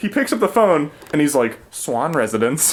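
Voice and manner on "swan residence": polite, very pleasant, friendly tone. Retelling how a character answered the phone: imitating a very pleasant phone answer. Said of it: "He says it just like that, like, very pleasantly".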